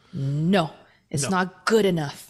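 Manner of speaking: very slow, deliberate, drawn-out delivery. Imagining an executive at home deciding on a device: Panos impression. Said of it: "that's my Panos impression".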